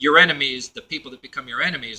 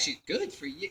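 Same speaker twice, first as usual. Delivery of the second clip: put-on sarcasm, much quieter; 11 dB quieter than usual. Describing someone's sneering reaction, mock-sarcastic 'good for you'. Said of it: "like a sarcastic".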